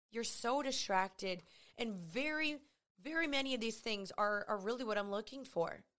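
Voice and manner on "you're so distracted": usual speaking voice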